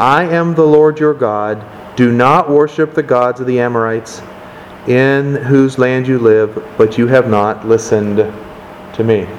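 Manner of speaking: ordinary talk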